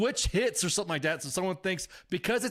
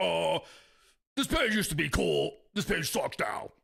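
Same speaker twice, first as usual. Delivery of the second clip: raspy, rough, creaky sci-fi creature voice; 2 semitones lower than usual. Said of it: "I'm doing my Edgar uh, impression".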